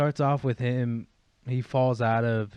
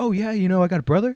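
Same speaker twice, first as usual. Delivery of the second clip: put-on 1950s-style talk, higher and louder; 8 semitones higher, 7 dB louder than usual. Imitating a patient from the chapter who talks like the nineteen fifties: imitating Jimmie G, 1950s-style talk. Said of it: "talking, like, nineteen fifties".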